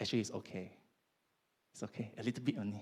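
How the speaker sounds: gentle, softly spoken, low-pitched, reassuring voice. Speaker voicing what the devil tells people to lead them astray: soft voice. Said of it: "the devil will tell you in the soft voice".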